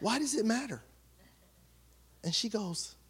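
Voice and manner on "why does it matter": very soft, hushed, sincere, honest tone. Recounting an argument, the speaker retells their own sincere, non-sarcastic question. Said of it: "not sarcastically or anything like that".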